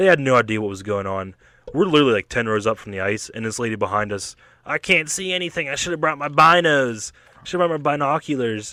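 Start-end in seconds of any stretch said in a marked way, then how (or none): 4.7-8.7 high-pitched complaining. Retelling what a lady behind them at the game said: imitating a complaining lady.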